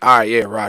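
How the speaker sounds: put-on sarcastic tone. Acting out a soldier's reply to a sergeant's repeated orders, mock-sarcastic 'roger'. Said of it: "when does it become like uh sarcastic?".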